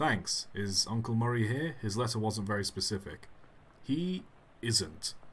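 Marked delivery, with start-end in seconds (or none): 3.8-5.1 short, darkly ominous, foreboding delivery. Asked whether the uncle is here, the character answers in an ominous tone. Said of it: "You said that in a kind of ominous way".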